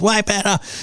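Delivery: play-acted, high-pitched, berserk woman screaming. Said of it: "this woman is screaming at this guy".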